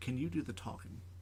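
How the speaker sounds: real quiet, under the breath, very quiet. Retelling how a friend pulled the speaker aside: imitating Jeff speaking real quiet. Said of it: "pulls me aside and goes real quiet".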